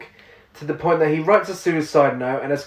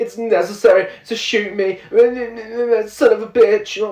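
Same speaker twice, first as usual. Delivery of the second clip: very slow, put-on, fake crying; 5 semitones higher than usual. Telling someone about her inaudible voiceover, act out her line, imitating someone pretending to cry. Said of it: "she's trying to act like she's crying".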